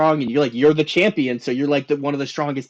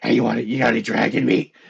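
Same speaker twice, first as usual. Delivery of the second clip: deep, darker put-on persona voice; 4 semitones lower than usual. Retelling lines of a kobold character from a game: darker, deeper voice. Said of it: "I talked with a darker, a deeper voice".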